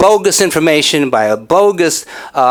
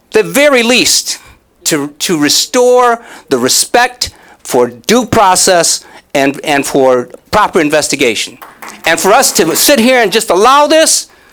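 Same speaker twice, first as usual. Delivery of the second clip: raised, pitched-up voice; 5 semitones higher than usual. Demanding that a situation be properly investigated, speaking with a raised voice. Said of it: "I'm raising my voice".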